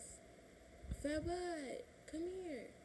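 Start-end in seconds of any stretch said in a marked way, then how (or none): 1.0-2.7 high, mild, put-on yell. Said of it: "So she yells".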